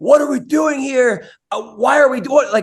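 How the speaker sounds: exasperated fake scream. Retelling how the fighter's corner yelled at him mid-fight: retelling a scream. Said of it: "His corner was screaming at him like".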